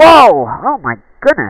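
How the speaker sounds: very high, very loud, startled shriek. Playing a game on stream, hit by its scariest moment, sudden scream. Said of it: "Sorry for screaming".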